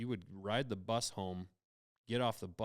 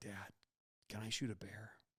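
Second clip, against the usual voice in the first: hushed whisper under the breath; 8 dB quieter than usual. Retelling a son's whispered phone call while hunting; retelling a whisper. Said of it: "he's whispering".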